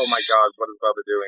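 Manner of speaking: usual speaking voice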